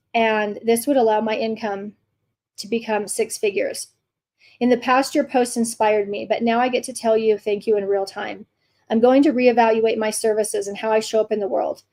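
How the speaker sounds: usual speaking voice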